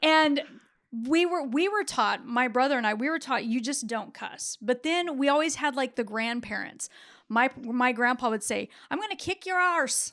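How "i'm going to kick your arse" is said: put-on Irish accent, much higher. Quoting what his grandpa would say, imitating an Irish accent. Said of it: "It's very Irish".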